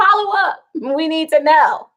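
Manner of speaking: high, mock eager insistent tone. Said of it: "He's like".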